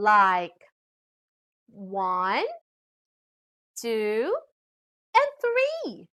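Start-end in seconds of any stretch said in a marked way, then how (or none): 1.7-5.9 rising intonation on the word three. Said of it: "when we are enumerating".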